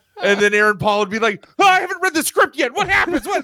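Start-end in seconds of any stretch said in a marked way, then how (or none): 1.6-3.4 mock, very high, panicked, freaked-out voice. Retelling how a co-star reacted to a scare about the script: imitating Aaron Paul freaking out. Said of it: "he'd be freaking out".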